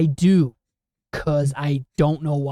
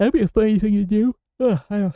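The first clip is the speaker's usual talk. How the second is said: talking through a yawn, pitched up; 5 semitones higher than usual. Podcast host chatting with others, yawning while talking. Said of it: "sorry, I'm yawning".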